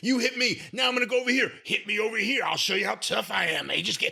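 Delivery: scornful, mocking put-on blustering tough-guy dunce voice. Criticizing a man's work, the speaker acts out his bits: mocking impression of him. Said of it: "I'm trying not to do the voice now".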